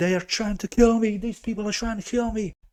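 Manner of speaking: put-on, frantic, high, rushed, panicked screaming. Retelling running into a rescuer's car: retelling panicked screaming. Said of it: "started panicking and screaming".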